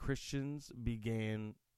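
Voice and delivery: strange, slow reading.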